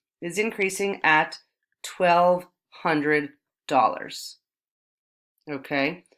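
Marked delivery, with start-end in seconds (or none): 0.2-4.4 deliberate, slow, unhurried step-by-step lecturing pace. Explaining a math result while waiting for the writing to catch up; speaking slowly. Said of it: "I'm speaking slowly to wait for my writing".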